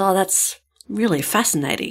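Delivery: deadpan, bored, flat monotone with zero interest. Retelling a man's reply to a woman who corrected him: mimicking a bored, flat tone. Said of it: "tone of voice and lack of expression indicates that he is anything but fascinated".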